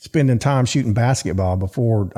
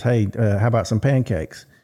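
ordinary talk

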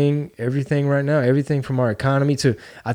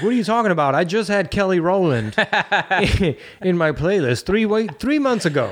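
teasing voice, pitched higher; 5 semitones higher than usual.

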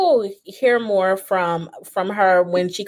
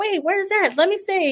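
put-on high-pitched eager child voice. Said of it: "And he's like".

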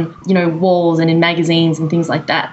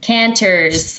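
put-on American accent. Giving a Twitter handle on a podcast, said in an American accent. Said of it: "I have to say that with an American accent".

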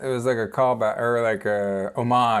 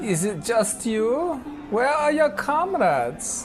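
put-on German accent, very high-pitched; 13 semitones higher than usual. Reading the Citizen part of a scripted scene: German accent. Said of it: "German accents for Citizen".

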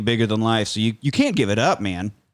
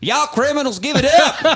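over-the-top Southern accent, very high, loud; 5 dB louder than usual. Imagining Batman confronting criminals, in a super Southern Batman voice. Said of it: "goes super Southern".

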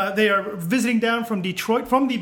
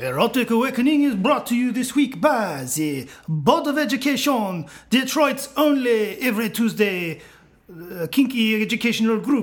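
put-on Romanian accent, played for sexiness. Reading the show's sponsor announcement, in a Romanian accent. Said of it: "Do you like my Romanian accent?".

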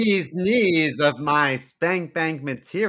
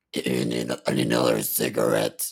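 put-on smoker voice, pitched lower. Joking about how a pregnant concertgoer might sound: imagined voice of a pregnant concertgoer. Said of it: "What if she sounds like this?".

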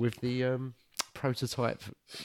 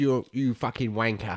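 worst, terrible put-on British accent; 4 dB louder than usual. Retelling what a bad guy said, in the worst British accent. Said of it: "that was the worst British accent".

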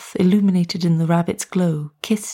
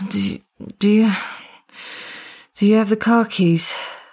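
slurred character voice, higher; 3 semitones higher than usual. Reading Michelle's line in a story: Michelle's slurred voice. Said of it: "Michelle's voice was slurred".

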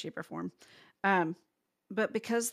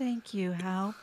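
mock-dejected, put-on downcast tone. Recounting a scene, quoting a woman thanking hal, mock-dejected thanks. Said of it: "In like the most dejected".

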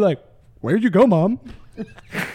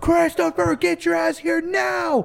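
put-on loud yell, higher; 8 semitones higher than usual. Retelling how the mother searched for him outside: imitating mom yelling loudly. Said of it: "She's yelling so goddamn loud".

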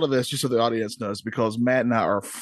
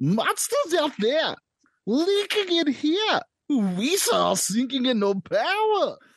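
put-on very high-pitched voice with Southern accent. Taking a turn as everyone tries the same movie line, do a Southern-sounding impression. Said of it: "even though they all sound Southern".

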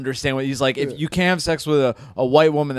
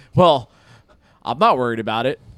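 put-on laughing voice; 4 dB louder than usual. Speaker retells an answer to a reporter at a press conference, laughing as he did. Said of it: "And he laughs and goes".

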